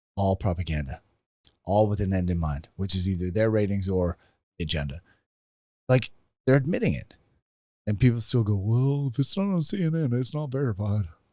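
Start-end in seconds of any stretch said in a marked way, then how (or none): 8.6-11.1 put-on high, slow, stretched-out Texan accent. Quoting what people still say about the news, in a Hank Hill Texan accent. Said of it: "that was a good accent".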